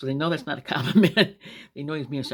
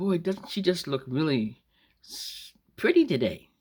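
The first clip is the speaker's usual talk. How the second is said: snide, sarcastic, swooping sing-song fake praise; 2 semitones higher than usual. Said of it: "Or else you could say something like".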